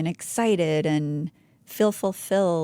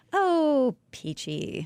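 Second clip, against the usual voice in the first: heavily sarcastic, high sing-song lilt; 9 semitones higher than usual. Answering how it is going today: sarcastic tone. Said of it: "If it sounds sarcastic, it's because it is".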